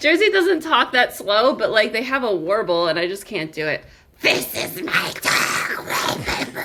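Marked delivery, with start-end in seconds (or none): 4.2-6.6 slow, drawn-out, odd granny voice, creature-like twist. Trying out a voice while introducing the dog Wallpaper: Gollum-meets-grandmother voice. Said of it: "Gollum meets grandmother".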